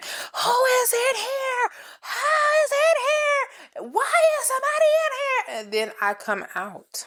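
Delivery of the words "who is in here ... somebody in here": put-on little girl shrieking, very high. Retelling how a little girl kept banging on the door, imitating a little girl screaming. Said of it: "She literally started screaming".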